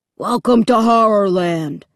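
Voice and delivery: gruff, rough, low-pitched monster voice. Narrator voicing a costumed monster in a ticket booth, gruff, low voice. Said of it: "he said in a gruff, low voice".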